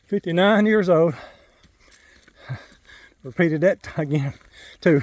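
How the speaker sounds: winded, out-of-breath voice. Hiker recording himself mid-hike, out of breath. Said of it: "and I'm out of breath".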